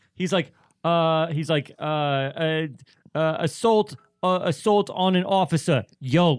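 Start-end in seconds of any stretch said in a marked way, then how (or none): 3.4-6.4 put-on weird Boston accent, higher and louder. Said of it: "I sound like, like Mayor Quimby right now".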